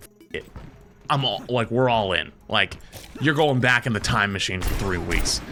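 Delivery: normal talking voice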